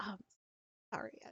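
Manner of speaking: very quiet, sheepish, timid half-whisper. Voicing a rookie who apologizes after dressing wounds: half-whispering rookie. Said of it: "they do kind of whisper".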